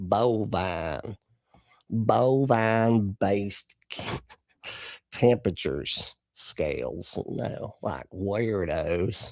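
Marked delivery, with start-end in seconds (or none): 0.0-7.2 slow, drawn-out, put-on country accent. Mulling over an odd phrase and saying it again, in a country accent. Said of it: "I'm hearing it in this country accent".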